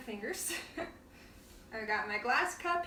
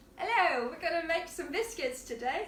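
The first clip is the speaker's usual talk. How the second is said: faux, put-on British accent; 4 semitones higher, 4 dB louder than usual. Speaker wonders about talking in a british accent all the time: put-on british accent. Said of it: "if I just talked in a British accent all the time?".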